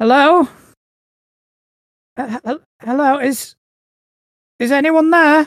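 put-on very uneasy, very high girl's voice, calling out. Narrator voices an unseen girl calling from outside, very uneasy voice. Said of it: "very uneasy voice".

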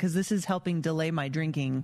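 ordinary talk

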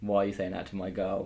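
ordinary talk

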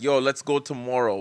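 ordinary talk, nothing marked

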